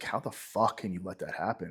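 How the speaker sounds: acted, exasperated, angry, pissed-off outburst. Retelling a shootout where someone froze under fire: imitating own angry thought. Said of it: "And I was kinda pissed".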